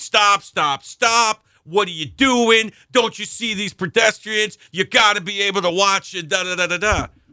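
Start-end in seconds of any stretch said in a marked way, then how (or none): 0.0-4.6 mock screaming, put on, much higher pitched. Retelling how a police officer at the crosswalk screamed at the speaker, imitating him screaming. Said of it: "he starts screaming at me".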